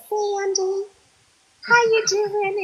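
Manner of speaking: put-on, very high, syrupy sweet voice. Retelling how a caller greeted her on the phone: sugary sweet imitation of Iva. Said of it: "so sugary and so sweet".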